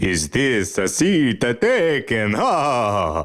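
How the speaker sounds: put-on very slow vampire voice, ha stretched. Joking at the start of an episode: put-on vampire voice. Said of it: "That's pretty good vampire".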